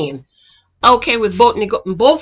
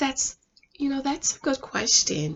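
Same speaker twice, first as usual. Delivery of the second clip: very soft, pretty, ladylike feminine voice; 2 semitones higher, 13 dB quieter than usual. Retelling how a woman answered a question, imitating a soft feminine voice. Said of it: "she changed her voice".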